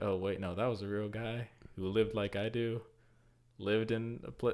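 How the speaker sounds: ordinary talk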